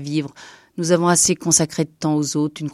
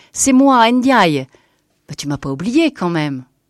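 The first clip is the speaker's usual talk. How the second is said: openly joyful, undisguised joy, louder; 2 semitones higher, 4 dB louder than usual. Narrator reading an old man greeting an old woman he knows, with undisguised joy. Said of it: "avec une joie non dissimulée".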